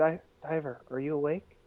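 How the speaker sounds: very quiet, soft, hushed voice. Trying to wake a character named diver who sleeps with eyes open, very quietly. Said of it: "Just very quietly".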